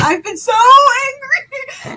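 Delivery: angry and upset, high, slow, loud anguished cry.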